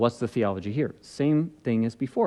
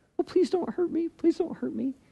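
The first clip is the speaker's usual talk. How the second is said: put-on very high whimpering voice. Retelling what another man would do when challenged: mock whimpering plea. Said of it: "Start like whimpering?".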